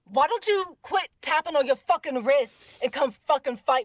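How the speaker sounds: very loud, high, play-acted furious yelling. Emoting as Gabriel in the game, mad and cussing: Gabriel angrily cussing everyone out. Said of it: "he's just cussing everybody out".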